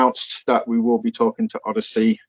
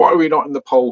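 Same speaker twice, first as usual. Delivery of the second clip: toned-down, mild shouty yell; 4 semitones higher than usual. Retelling complaints about a Twitter poll: imitating people shouting. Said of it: "I'm getting shouted at by people".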